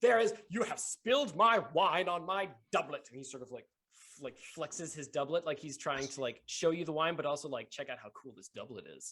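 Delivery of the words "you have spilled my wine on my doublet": indignant, affronted, raised and pitched-up huff. Voicing a man knocked to the ground who scolds a young lady: indignant nobleman. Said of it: "adjusts his doublet indignantly and says".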